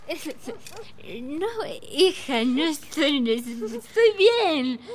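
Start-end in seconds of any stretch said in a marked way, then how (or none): 1.2-4.8 tipsy, slurred, insistent speech. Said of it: "¡Estás borracha!".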